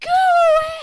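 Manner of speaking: forceful full-lung scream, very high, very loud, drawn-out. Speaker retells confronting a man, retelling a forceful scream. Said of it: "I screamed at him".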